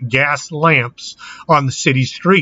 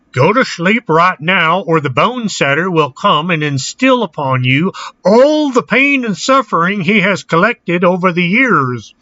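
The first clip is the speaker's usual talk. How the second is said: put-on French-Canadian accent that misses; 4 semitones higher than usual. Parents warning misbehaving children to go to sleep, attempted French-Canadian accent. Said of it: "I know that doesn't sound like a Canadian or a French accent".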